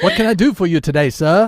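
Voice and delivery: terrible, loud put-on British butler accent. Speaker imitates the new voice he gave his Siri, bad Siri British butler impression. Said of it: "that's a terrible accent".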